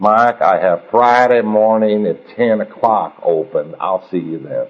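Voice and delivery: put-on Oklahoma accent, businessman-style speech. Acting out a phone exchange with the speaker's sponsor: Oklahoma accent. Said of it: "see if I can do my Oklahoma accent".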